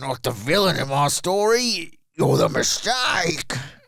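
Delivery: attempted Australian accent. Speaker delivers a script line on request: attempted Australian accent. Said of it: "Try to do an Australian accent".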